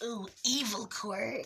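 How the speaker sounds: dry, parched-throat sneering villain voice. Telling a story scene, the speaker voices the villain's reaction: dry Shigaraki voice. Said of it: "with that dry voice".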